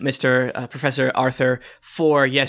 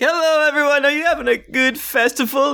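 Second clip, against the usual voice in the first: put-on very high, drunk, stumbling professor voice; 12 semitones higher than usual. Voicing a professor who stumbles up to the group: drunk stumbling professor voice. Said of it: "he kinda stumbles up to the group like".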